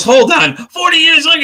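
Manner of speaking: very high-pitched, alarmed, freaking-out voice. Retelling a man's reaction to a grandmother's answer, imitating someone freaking out. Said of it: "He just starts freaking out".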